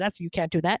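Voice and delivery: ordinary talk, nothing marked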